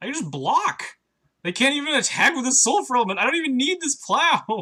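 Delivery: thrilled, loud, high outburst.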